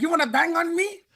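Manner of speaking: put-on gang member voice. Retelling a gang member confronting him: heavy Cambodian American accent. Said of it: "heavy, uh, Cambodian American accent".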